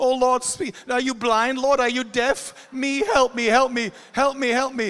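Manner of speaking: play-acted, loud, frantic, desperate pleading cry. Acting out a worried listener's prayer to God: acting out desperate begging. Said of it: "the very thing you're begging him for intervention".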